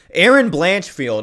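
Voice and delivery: loud, slow, boxing-ring announcer style call.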